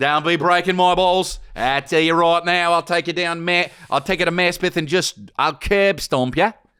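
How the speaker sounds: put-on New York accent, pitched very high. Joking with the other speaker, doing an Anthony LaPaglia impression. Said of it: "I'm Anthony LaPaglia".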